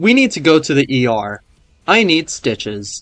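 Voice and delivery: offhand, calm, nonchalant, matter-of-fact delivery. Retelling telling a mother about needing stitches: imitating a nonchalant tone. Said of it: "I said it so nonchalantly".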